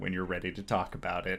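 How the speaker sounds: low, soft murmur under the breath. Speaking in character to a player who walked away: under the breath. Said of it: "I say under my breath".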